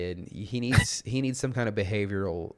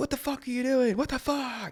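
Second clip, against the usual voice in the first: mock screaming, higher pitch. Acting out an imagined reaction to a biting kid: acting out screaming at someone. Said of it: "I just scream at him".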